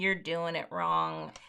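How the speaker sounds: low, soft, slow complaining voice. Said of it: "that's what people sound like to me".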